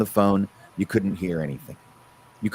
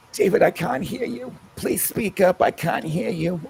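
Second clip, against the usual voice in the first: put-on very high-pitched grandmother voice; 10 semitones higher than usual. Doing your own grandmother speaking to David, in a Grandma Charlotte voice. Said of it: "that is my grandmother's voice I just did".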